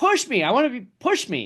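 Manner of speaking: put-on yelling, very high with wild pitch swings. Retelling how a driver in the truck race yelled for a push: imitating a driver yelling. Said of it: "he's yelling".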